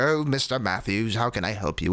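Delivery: put-on, faintly British accent. Describing how the character acts on the show, in Mr. Feeney's vague British accent. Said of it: "With his like vague British accent".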